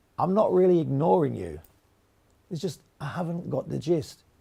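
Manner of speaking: usual speaking voice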